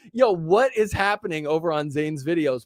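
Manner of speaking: ordinary talk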